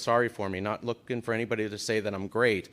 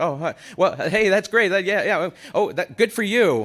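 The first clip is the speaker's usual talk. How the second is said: high, loud, nervous, flustered, stumbling babble; 8 semitones higher, 7 dB louder than usual. Retelling a helpful stranger's reaction after hearing they are married: imitating a nervous man. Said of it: "he got very nervous at that point".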